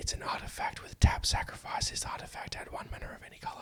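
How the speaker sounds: hushed whisper. Reading the reminder text in parentheses off a card: whispering. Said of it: "so I have to whisper it".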